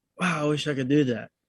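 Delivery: plain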